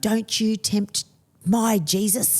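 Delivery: slow, drawn-out mild yell. Retelling reacting to a movie scene on TV: imitating screaming at the TV. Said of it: "I'm screaming at the T V going".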